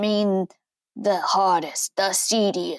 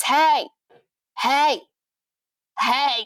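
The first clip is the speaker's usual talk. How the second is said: repeated friendly calling out, high and light; 5 semitones higher than usual. Retelling how a man shouted at every car passing by, imitating someone shouting hey. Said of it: "he just started shouting at every car".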